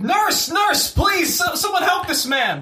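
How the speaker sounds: very high, loud hollering call. A player voices his character sprinting to the door, hollering for help. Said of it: "is just hollering like".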